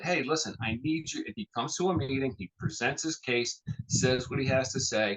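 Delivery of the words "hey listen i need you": put-on earnest, heartfelt, passionate tone. Recalling a county executive candidate asking for help, imitating Darren's passionate plea. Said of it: "you can hear the passion in this guy's voice".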